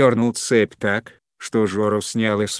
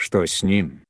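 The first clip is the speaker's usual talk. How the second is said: usual speaking voice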